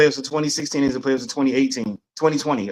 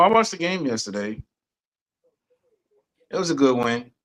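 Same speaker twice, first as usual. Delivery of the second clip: sounding less than pleased, glum and unhappy tone. Speaker, asked about yesterday's game win, answers sounding unhappy. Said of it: "Why you don't sound happy".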